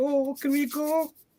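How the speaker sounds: put-on very high, slow excited child voice. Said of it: "he got all excited".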